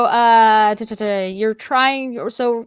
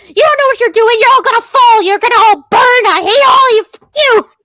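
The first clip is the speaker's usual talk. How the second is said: shrill, loud, screeching delivery; 12 semitones higher, 9 dB louder than usual. Retelling how a character screeches at the mushroom people, screeching. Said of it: "it's just like screeching at these mushroom people".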